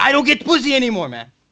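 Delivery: mock furious shrieking, very high-pitched. Retelling what an old guy said to the speaker: imitating Ozdegon screaming. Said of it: "He's just screaming".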